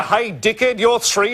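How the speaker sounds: normal talking voice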